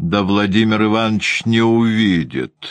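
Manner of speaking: voice dripping with spite, malicious. Read a woman's line as she answers someone in a story, spitefully. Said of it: "злобно ответила Анна Григорьевна".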